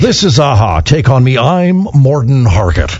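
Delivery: put-on, mock newscaster voice. Pretending to be a news anchor named morten harket: put-on news anchor voice. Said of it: "he should be, like, a news anchor".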